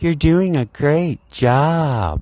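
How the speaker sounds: feminine voice, high, very slow and drawn out. Mocking how a lead comes up to praise the speaker, mocking Will's feminine voice. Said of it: "that's Will's voice. It's very feminine".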